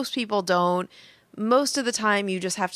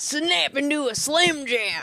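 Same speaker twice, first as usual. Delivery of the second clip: put-on Southern wrestler voice, sometimes higher; 5 semitones higher than usual. Trying a Macho Man Randy Savage catchphrase when asked. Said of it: "I was trying to sound Southern".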